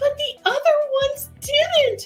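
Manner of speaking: mock panicked voice. Retelling a daughter upset about missing episodes: imitating a panicking daughter. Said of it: "And she's panicking".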